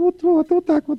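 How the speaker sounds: mock very high, squeaky woman's voice.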